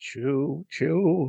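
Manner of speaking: soft, spooky, spectral ghost voice. Announcing the Polar Depress train, sounding like the Ghost of Christmas Past. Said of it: "You sound like the ghost of Christmas past".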